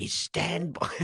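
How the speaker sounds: high London accent. Performing a scene as the Artful Dodger addressing Oliver, in a London accent. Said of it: "shall I take us out in a London accent?".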